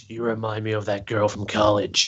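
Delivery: very deep, low, hushed creepy murmur. Discussing a man's tensions with a woman, speaker quotes him: mock creepy voice. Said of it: "in his real creepy voice".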